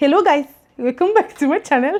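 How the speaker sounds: put-on Indian accent. Greeting channel viewers, trying out an Indian accent. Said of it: "Let me try giving you guys Indian accents".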